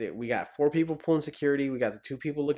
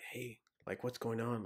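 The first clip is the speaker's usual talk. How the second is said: put-on whisper, quieter; 13 dB quieter than usual. Retelling what others whispered while out on training: imitating whispering. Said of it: "you can hear everybody whispering".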